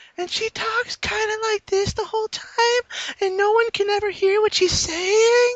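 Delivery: way up high, piping, very high-pitched voice. Speaker describes a woman she calls Tandra, imitating Tandra's quiet voice. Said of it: "talks really quietly in a really high-pitched voice".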